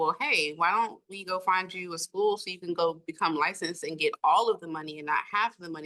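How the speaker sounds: ordinary talk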